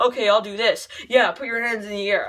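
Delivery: put-on flat, wooden delivery. Mocking an actor's film performance: wooden Ryan Reynolds impression. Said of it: "he was so wooden".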